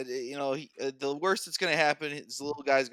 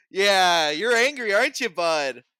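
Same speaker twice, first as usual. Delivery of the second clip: very loud, slow, patronizing, condescending talking-down voice; 7 semitones higher, 9 dB louder than usual. Joking about how to talk to a shorter person: mock talking down. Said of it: "get down to his level".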